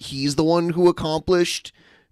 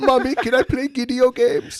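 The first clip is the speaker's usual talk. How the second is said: put-on high, babyish little toddler voice; 8 semitones higher than usual. Mocking a man who talks like a toddler: imitating toddler-like talk. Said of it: "does he kinda talk like a toddler?".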